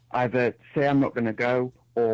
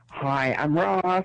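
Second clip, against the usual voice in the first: call-in show host voice with raised pitch; 5 semitones higher than usual. Asked by the host to do an impression of him: Ross impression. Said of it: "Do your impression of me again".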